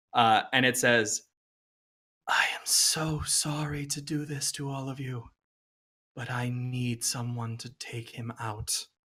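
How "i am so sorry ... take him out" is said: faint, very hushed, very soft whisper. Narrating to the players, voicing the same voice from earlier, whispering voice. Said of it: "that same whispering voice from earlier".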